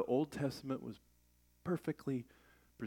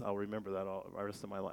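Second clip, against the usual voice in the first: ordinary delivery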